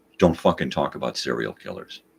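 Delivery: mock very, very serious, grave voice. Retelling cutting in during a quiet moment, acting out a very serious voice. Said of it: "in a very, very serious voice".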